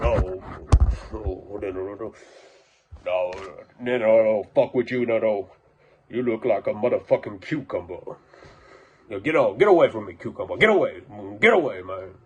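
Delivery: agitated, spooked, angry, horse-like ranting. Retelling how a visitor reacted when asked to leave: imitating Jonah like an angry horse. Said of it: "almost like an angry horse".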